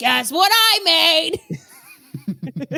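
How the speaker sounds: put-on New York accent, loud and high. Playing the inventor Howard F. Chicago showing off his yearly invention: New York accent. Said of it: "just doing New York accents for this very Chicago man".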